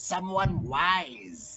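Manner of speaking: put-on crow voice, 'wise' drawn out. Speaker retries a character's line in a roleplay scene, in a crow voice. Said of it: "let me try to get into a more crow voice".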